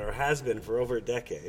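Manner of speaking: plain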